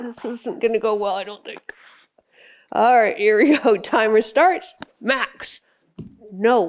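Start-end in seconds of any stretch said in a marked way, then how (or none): 5.0-6.7 harsh, mean tone. Speaker telling Max no, in a mean voice. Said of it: "that was my mean voice".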